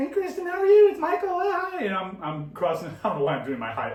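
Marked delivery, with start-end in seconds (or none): 0.0-1.8 very high, loud, weasel-like squeaking voice. Retelling greeting a woman after getting knocked over, imitating his own high voice. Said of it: "I picture my voice being high".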